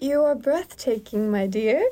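bad, terrible fake put-on British accent. Redoing a story character's line when asked, in a put-on British accent. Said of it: "say that in the correct accent".

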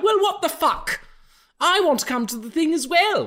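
very high, shrill, loud voice. Acting out an actress demanding to come too: Veruca Salt voice. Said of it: "she sounds like Veruca Salt".

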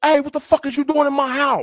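mock very high-pitched, loud yelling. Acting out catching an intruder in the house: imitating a yell at an intruder. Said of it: "especially if I'm yelling".

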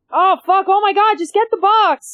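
very high-pitched, loud, exasperated, frustrated outburst. Watching a scene where a puppet cannot grab the box: frustrated outburst. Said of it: "This is so frustrating".

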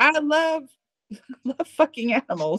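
put-on American southern accent. Quoting an extreme kind of person, use a put-on southern accent. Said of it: "notice you went with a bit of a southern accent there".

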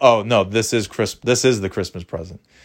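ordinary delivery

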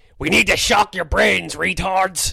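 loud, rough cartoon voice. Asked for an impression, you try Dr. Marvin Monroe but it comes out as an Alex Jones-like voice. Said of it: "That's more Alex Jones".

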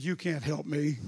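dropped into a low, deep man's voice. Retelling what a woman said during the ordeal, the speaker uses a man's voice. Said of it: "in a man's voice".

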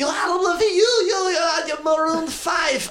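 excited, shouted, put-on Taiwanese accent.

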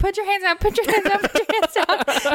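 very high, panicked, terrified shrieking screams. Retelling a roller coaster ride beside your cousin, imitating own terrified screaming. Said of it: "the whole time I was screaming".

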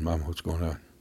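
ordinary delivery

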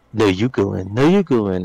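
put-on reluctant, hesitant, nervous, holding-back delivery. Retelling how teammates acted in a scary game: imitating hesitant friends. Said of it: "they were so hesitant".

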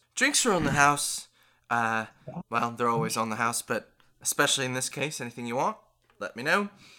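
put-on fast, rattled-off Aussie Australian accent. Playing a barmaid behind the bar refilling mead jugs, Australian accent. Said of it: "why are in we Australians suddenly?".

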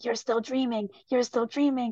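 put-on demonic voice. Retelling a dream, voicing what a demon voice kept saying: demon voice. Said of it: "this like demon voice go".

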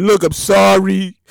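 weepy, sorry-sounding, tearful, near tears. Retelling a politician's apology: imitating Andrew Cuomo's tearful apology. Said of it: "He tearfully apologized".

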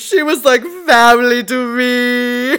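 acted tearful blubbering, last word me drawn out. Retelling how a man cried over Katya, imitating someone crying. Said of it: "he starts crying and he's like".

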